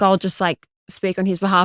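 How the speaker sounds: ordinary talk, nothing marked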